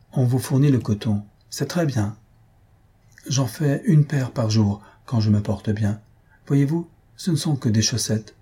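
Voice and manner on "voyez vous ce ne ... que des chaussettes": ordinary delivery, nothing marked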